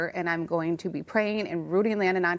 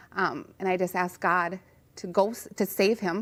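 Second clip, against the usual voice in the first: plain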